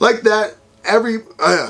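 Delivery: stumbling over words. Host wrapping up the video, stuttering. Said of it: "sorry I'm stuttering a lot today".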